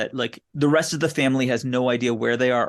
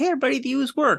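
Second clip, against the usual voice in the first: very high, friendly nice-guy voice; 13 semitones higher than usual. Retelling a movie scene with a tentacle monster: Veb's nice guy voice. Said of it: "He's got this nice guy voice".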